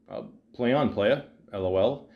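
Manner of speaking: normal talking voice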